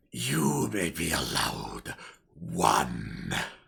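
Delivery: very low, rough, creaky beast growl. In a tabletop game, the game master answers a player as the wolf: great wolf voice. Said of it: "The wolf growls".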